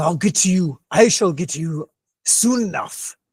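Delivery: menacing, spoken through gritted teeth. Voicing an enemy who glares at Tortman after resisting a spell: through gritted teeth. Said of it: "grits his teeth and looks over at you".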